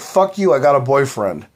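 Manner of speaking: normal talking voice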